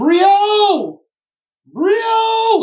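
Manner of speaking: mock very high, very loud, long drawn-out carrying yell. Retelling how she yelled for his name again, retelling a really loud yell. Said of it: "starts yelling for his name again really loud".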